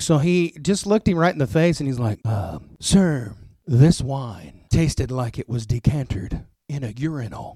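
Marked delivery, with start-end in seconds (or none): 2.3-7.6 slow, measured, deliberate, mannered, theatrical speech. Retelling a mentor's line about the wine: imitating Moon's voice. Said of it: "Moon talked like if Vincent Price and Mister Burns from The Simpsons had a baby".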